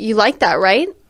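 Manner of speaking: upward lilt at the end on "right". Showing how people go high at sentence ends: rising pitch on 'right'. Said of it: "we go high at the end of sentences".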